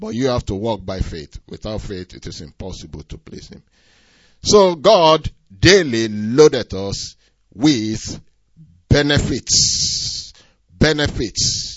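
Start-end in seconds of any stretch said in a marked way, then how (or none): 4.4-11.8 benefits drawn out slow and loud, emphatic. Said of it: "Underline the word benefits also".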